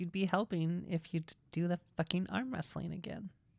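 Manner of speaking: speaking through clenched, gritted teeth. In an arm-wrestling scene, a woman answers her opponent: through clenched teeth. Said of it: "She's through clenched teeth".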